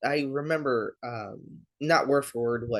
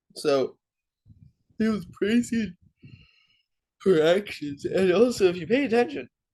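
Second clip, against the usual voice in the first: halting speech broken up by a yawn; 6 semitones higher, 3 dB louder than usual. Explaining a gospel passage to listeners, yawning while speaking. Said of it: "I just keep yawning".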